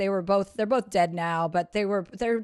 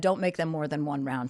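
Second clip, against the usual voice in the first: stern tone, lower pitch; 4 semitones lower, 3 dB quieter than usual. Retelling how a brother warned about the drinks, imitating stern speech. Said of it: "Like, very sternly, he's talking to me".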